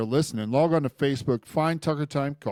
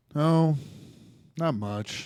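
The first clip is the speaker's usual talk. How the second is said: dejected, downcast voice; 4 dB quieter than usual. Answering a greeting from someone asking what's up, sounding down. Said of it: "You sound down".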